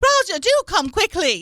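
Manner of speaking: fake mid-Atlantic accent, pitched very high. Playing an old-film character calling for Roger: put-on mid-Atlantic accent. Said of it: "The mid-Atlantic accent".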